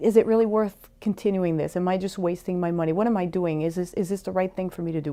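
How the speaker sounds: ordinary talk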